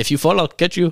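put-on Trinidad accent. Retelling what Michael's buddy said to him, Shifong's slight Trinidadian accent. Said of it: "he's got a little accent".

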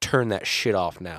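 mock angry, aggressive tone. Imitating a spirit that ordered the music off: imitating an aggressive command. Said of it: "It was an aggressive".

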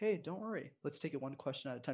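very hushed, soft, low-key calming, reassuring voice. Demonstrating how to reassure a nervous first-time guest, speaking really quietly. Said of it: "really quietly let me say".

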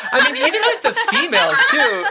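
high, loud speech, laughing while talking.

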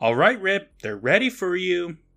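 put-on high-pitched hollering, calling out. Recapping a scene where Mom calls out to Rip, retelling a yell. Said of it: "Mom yells".

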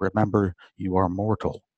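ordinary delivery

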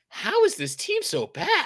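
high, slow, exasperated disbelief.

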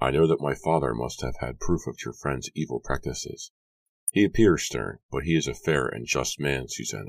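ordinary delivery

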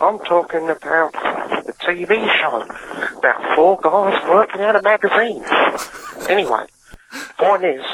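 terrible fake Australian accent slipping around. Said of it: "I'm trying to do Australian".

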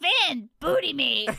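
loud put-on cartoon voice. Taking a turn doing voices, the speaker does a Jake voice. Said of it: "this is Jake".

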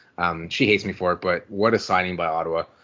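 ordinary talk

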